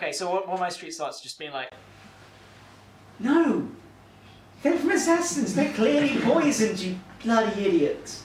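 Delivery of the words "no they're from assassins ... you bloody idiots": patronising, condescending put-on voice, louder. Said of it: "really condescending to everyone".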